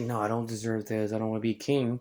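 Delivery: ordinary delivery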